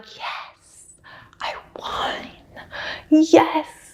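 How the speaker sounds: very slow, barely-there, understated whisper. Retell a race winner's comically understated celebration, imitating an understated whisper. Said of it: "He literally like whispered like".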